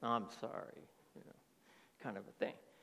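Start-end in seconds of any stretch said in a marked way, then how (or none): 0.0-0.9 mock grudging, resentful tone, lower and quieter. Retelling how children apologize without meaning it: imitating a grudging apology. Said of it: "they even say it with a clenched fist".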